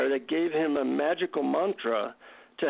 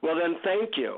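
grudging, biting, sour sarcasm, acted out. Retelling how they answered him after feeling let down: retelling a sarcastic reply. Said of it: "sarcastically I say".

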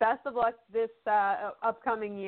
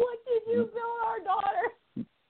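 put-on very high, outraged, shrieking mother voice; 13 semitones higher than usual. Retelling a mother's reaction to a fast-built car: imitating mom screaming. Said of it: "she started screaming at him".

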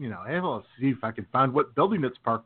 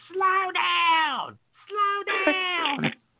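very high, shrill, slow, drawn-out scream. Telling how a neighbor woman reacted to someone flying past, retelling a scream. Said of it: "she screams".

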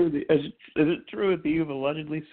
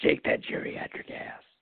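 creepy pervy voice, quieter. Playing a pervy caller teasing a grandpa on the phone, creepy perverted voice. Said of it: "you have a great perverted voice".

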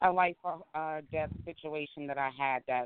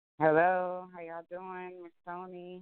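put-on, laid-on sultry voice; 4 semitones higher than usual. Greeting the hosts on joining the chat room: put-on sultry voice. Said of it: "You done put on your sultry voice".

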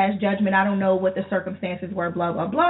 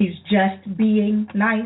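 slow, sarcastic, audible air quotes. Complaining about a man who won't go away, saying his excuse with audible finger quotes. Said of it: "Those are finger quotes in case you couldn't hear it in my voice".

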